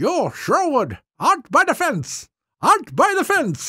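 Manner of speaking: put-on high, swooping, angry German accent with a temper. Remembering the man from the shops at Jordan you got in trouble with, do Chester Foos's German accent. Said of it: "and he had that German accent".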